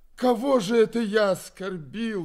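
loud, high, howling wail. Narrator voicing Foma as he answers a demand to confess: howling. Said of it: "вопил Фома".

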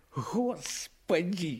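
groaning through stifled laughter. Narrator reads a man trying to stop a fit of laughter, groaning, fighting back laughter. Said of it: "стараясь унять припадок смеха, простонал Кресин".

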